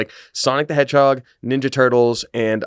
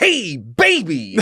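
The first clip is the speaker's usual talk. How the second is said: put-on bold, loud, pitched-up voice; 8 semitones higher than usual. Imitating another speaker's loud greeting when entering the office: imitating someone saying it loudly. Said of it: "you just very loudly".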